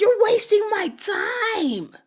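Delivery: put-on shrill, very high, drawn-out screaming. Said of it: "just screaming at me".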